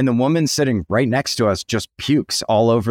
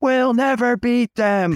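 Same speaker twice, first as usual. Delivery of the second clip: put-on screaming, higher; 12 semitones higher than usual. Retelling how a fan reacted to the loss: imitating a fan screaming. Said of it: "One guy was just screaming".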